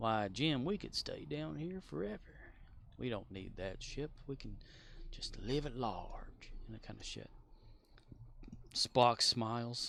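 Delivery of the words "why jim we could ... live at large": soft, relaxed, gentle southern drawl. Recounting an episode where McCoy talks to Jim: McCoy's southern drawl. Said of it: "more of a southern drawl to his voice".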